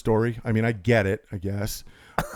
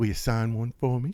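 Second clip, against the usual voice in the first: quieter put-on woman's voice; 5 dB quieter than usual.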